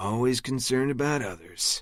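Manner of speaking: sarcastic raspy voice. Reading a story aloud, a friend's quip about others: sarcastic raspy voice. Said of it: "a shit ton of sarcasm in his raspy voice".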